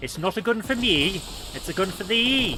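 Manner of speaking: terrible fake Welsh accent.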